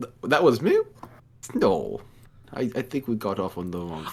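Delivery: stammering, swooping, feigned innocent tone. Voicing a character holding the knife, denying it: feigned innocence in character. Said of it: "I look behind me like".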